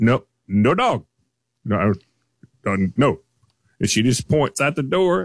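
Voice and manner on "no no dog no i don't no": put-on German accent, curt and clipped. Retelling a store door checker refusing a dog: imitating a German accent. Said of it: "she has a German accent and she is a no-nonsense woman".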